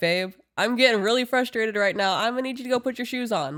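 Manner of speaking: cheery upbeat delivery. Parent retelling asking their son to put his shoes on, in a chipper tone. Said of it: "I'm going to say it with a chipper fucking tone".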